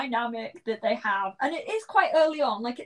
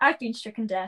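ordinary talk

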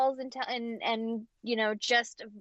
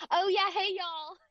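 put-on Southern accent, pitched up; 8 semitones higher than usual. Showing how you pick up a neighbour's way of talking: put-on Southern accent. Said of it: "talks with a Southern accent".

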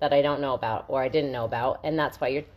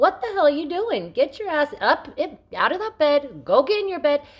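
high, loud, angry yelling. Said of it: "I'm yelling at her".

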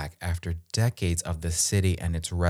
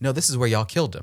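sudden, pitched-up shouted yell; 7 semitones higher than usual. Retelling yelling at the paused television: retelling own yell. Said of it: "I just yelled".

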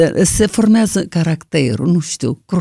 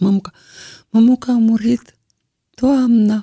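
mock-crying, tearful voice, much higher pitch; 5 semitones higher than usual. Retelling a young relative's call saying her teacher had died, imitating someone crying. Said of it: "murit plângând".

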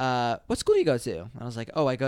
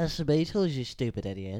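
put-on Liverpool-style voice, quieter; 4 dB quieter than usual. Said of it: "That's a good Beatles impression".

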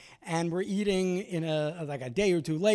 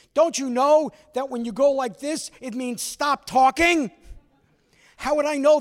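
acted mock yelling; 7 semitones higher, 6 dB louder than usual. Retelling the drive home with the aunt scolding the speaker: imitating aunt yelling. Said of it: "my aunt is yelling at me".

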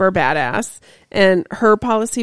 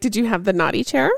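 ordinary talk

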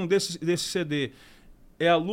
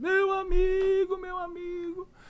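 high, very slow, tearful, choked-up words; 12 semitones higher than usual.

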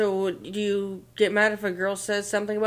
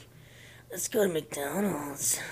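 whispered, breathy, unsettling and creepy tone; 5 semitones lower, 8 dB quieter than usual. Showing how an ordinary phrase can sound creepy, in a creepy voice. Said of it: "it'd sound creepy".

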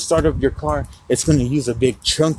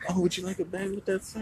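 mock sudden sweet, polite, overly nice high tone; 5 semitones higher, 12 dB quieter than usual. Retelling a worker offering a bag: imitating someone being all nice. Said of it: "she starts being all nice".

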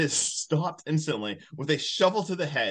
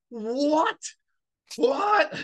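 play-acted, shrill, high, abrupt, sudden yell; 11 semitones higher than usual. Telling a funny story, the speaker acts out a guy yelling: retelling a yell. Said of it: "Then he just yells".

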